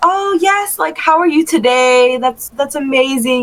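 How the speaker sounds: tidy, best-behaviour talk. Imitating how they would talk to their pastor: imitating polite cleaned-up talk. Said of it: "I would obviously clean that shit up".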